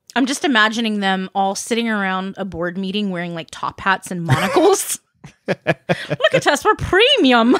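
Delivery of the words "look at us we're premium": put-on Irish accent. Imagining beer company executives at a board meeting, put-on irish accent. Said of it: "I kind of made them Irish".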